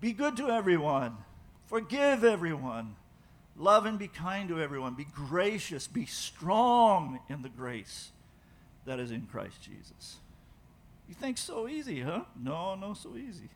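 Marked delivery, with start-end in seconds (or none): 11.1-13.5 English in a soft, high put-on Brazilian accent. Speaker addressing the listeners, talking like a Brazilian. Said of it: "I'm talking like a Brazilian".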